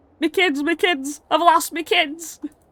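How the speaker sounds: high, panicked, frantic wail. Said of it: "absolutely shitting himself".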